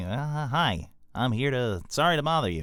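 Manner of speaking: slightly nasal, slow, high-pitched voice. Imitating an actor's voice while discussing a film's cast: nasal David Cross impression. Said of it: "I do a good David Cross".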